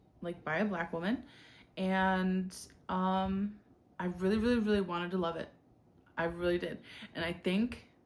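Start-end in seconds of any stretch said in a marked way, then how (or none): none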